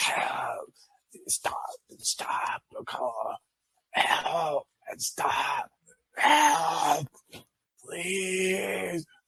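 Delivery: very slow, high-pitched, pleading whisper. Voicing a figure calling from the darkness: whispering plea for help. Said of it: "you hear this whispering coming from the darkness".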